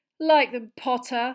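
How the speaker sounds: loud, high-pitched shouting. Narrator reads a character addressing another as he approaches, loudly. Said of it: "said Malfoy loudly".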